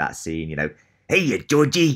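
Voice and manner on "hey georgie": creepy clown voice, higher and louder. Recalling a movie scene from childhood, quoting the clown in a Pennywise impression. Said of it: "you're nailing these impressions for both of them".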